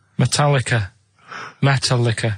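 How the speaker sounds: band name made to sound like metal liquor. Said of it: "make Metallica sound like Metal Liquor".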